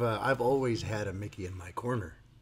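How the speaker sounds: ordinary talk, nothing marked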